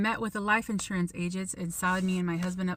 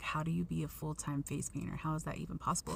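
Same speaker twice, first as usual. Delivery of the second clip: mimicked whisper, lower and quieter; 3 semitones lower, 9 dB quieter than usual. Retelling what a lady standing behind her whispered about her job: imitating a whisper. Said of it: "started whispering".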